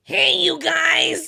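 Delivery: loud rough high-pitched belting. Retelling how a woman imitates Donald Duck, bad Donald Duck voice. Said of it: "this is what she thinks Donald Duck sounds like".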